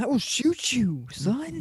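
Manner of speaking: put-on angry character voice. A speaker discussing episode 4 acts out Karen, mock-angry Karen impression. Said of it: "angry Karen is angry".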